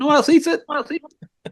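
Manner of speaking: defensive, pitched way up.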